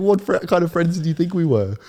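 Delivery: acted, furious, very high-pitched, loud outburst. Retelling a friend's reaction to the speaker's worry about being ditched, imitating a furious friend. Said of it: "Like he was so mad".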